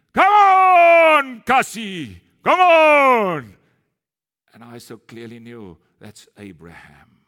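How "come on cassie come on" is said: very loud, very slow, drawn-out shout. Recounting a bearded man shouting at Cassie through the windscreen; imitating someone shouting. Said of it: "he was shouting at me".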